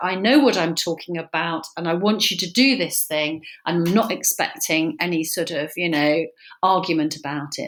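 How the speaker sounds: ordinary delivery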